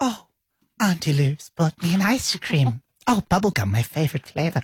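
put-on childlike five-year-old boy voice. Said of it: "That's how he talks".

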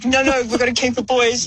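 insistent, take-charge leader voice. Teasing the other speaker by imitating them as the leader: imitating the other speaker as leader. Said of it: "I bet you were the leader being like".

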